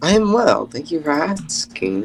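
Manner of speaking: sunny, chipper, bright, cheery voice. Voicing Angie answering a player: bright cheery Angie voice. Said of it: "You seem bright and cheery today".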